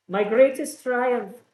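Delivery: put-on high Russian accent. [name] answers a question about the pirates, Russian accent. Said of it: "this is more like Russian".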